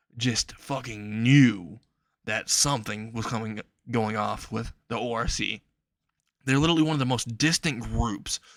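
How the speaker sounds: usual speaking voice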